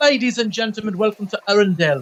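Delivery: put-on British accent in announcer, master-of-ceremonies style. Imitating the British master of ceremonies at the Frozen show; British accent. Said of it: "he was he was British".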